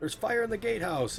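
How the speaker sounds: very high-pitched yelled shout. Voicing guards who discover a fire: guards yelling. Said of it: "you can hear some guards kinda yelling".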